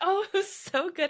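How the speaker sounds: tearful, choked-up voice, pitched very high. Recalling a moving game moment with another speaker: choked up. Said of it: "I'm getting choked up thinking".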